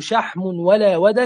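plain

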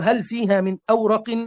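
ordinary talk

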